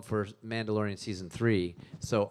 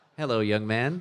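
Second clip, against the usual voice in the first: put-on droid voice, louder; 4 dB louder than usual. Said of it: "I'm doing C three P O's voice".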